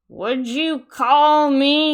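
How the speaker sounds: loud, slow, words smeared and slurred together. Speaker retelling a confrontation, imitating the man slurring his words. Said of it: "slurring his words".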